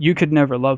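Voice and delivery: acted crying, sobbing voice. Retelling a phone call in which she was bawling: imitating someone crying. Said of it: "She's just crying".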